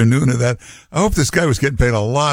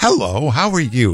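sweet, warm, friendly tone. Imitating a caller who sounds friendly, warm and sweet: imitating a friendly, warm, sweet Utah voice. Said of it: "You sound so warm and sweet".

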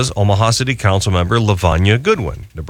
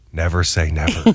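mock whispering, lower pitch; 3 semitones lower than usual. Retelling a whispered reply to the council member: retelling a whisper. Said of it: "Then I whispered".

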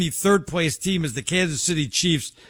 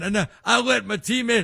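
put-on Southern drawl, much higher pitch; 6 semitones higher than usual. Imitating a player while the other speaker objects, put-on southern drawl. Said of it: "You're giving him a southern drawl".

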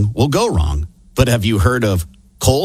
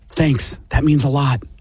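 hushed whisper. Reading a joke aloud, delivering the punchline line: whispering. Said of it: "and whispers".

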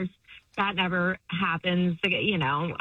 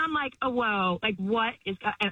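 ordinary talk, nothing marked

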